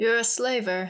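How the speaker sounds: lifeless, toneless, dull, flat delivery. Narrator reading Philip's reply to Arietta, said dully. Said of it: "he said dully".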